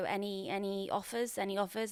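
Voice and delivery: ordinary talk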